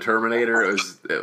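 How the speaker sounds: plain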